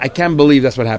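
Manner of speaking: ordinary talk, nothing marked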